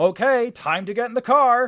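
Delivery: perky, shrill, high, very loud shout. Retelling what they yelled while sleep-talking: imitating own sleep yelling. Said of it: "yell almost at the top of my lungs".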